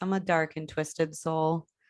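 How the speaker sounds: plain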